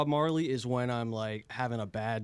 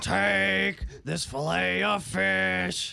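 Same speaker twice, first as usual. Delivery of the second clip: high, slow, creaky, rough drawl with words stretched long; 7 semitones higher, 4 dB louder than usual. Imitating another person's take on Bubba's voice: Bubba impression. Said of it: "this is [name] doing Bubba".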